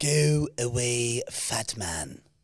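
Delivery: very slow, deliberate, drawn-out cartoon voice, every word stretched. Taking a turn after the other speaker says "do yours": Stewie voice. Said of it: "Wrecked by Stewie".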